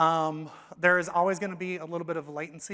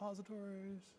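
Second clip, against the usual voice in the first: very quiet muttering under the breath; 3 semitones higher, 18 dB quieter than usual. Presenter pulling up his demos, muttering to himself. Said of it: "(to himself)".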